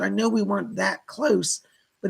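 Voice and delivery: plain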